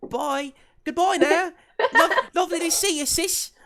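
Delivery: goofy, silly voice, very high and very loud. A game narrator voices a character parting from her sister, in [name]'s silly funny voice. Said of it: "I love it when you do that funny voice".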